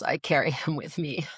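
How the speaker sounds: grieving voice, grief plainly audible. Asked for parting thoughts, she speaks of her husband, grief audible in voice. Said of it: "you can hear it in my voice".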